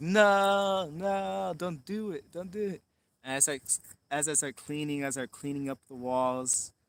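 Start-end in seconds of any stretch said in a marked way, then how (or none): 0.0-2.8 high, very slow acted scream, "no" stretched long. Retelling people in the other room screaming: imitating people screaming. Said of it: "the people in the other room start screaming".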